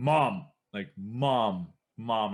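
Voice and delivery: very slow, long-held, drawn-out screams. Retelling calling for a parent as a scared child: imitating screaming for mom. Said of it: "I started, like, screaming".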